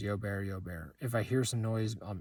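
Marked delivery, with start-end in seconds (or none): none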